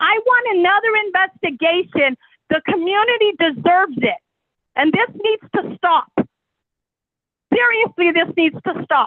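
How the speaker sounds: heated, fed-up, upset, angry insistence. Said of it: "I'm a little upset".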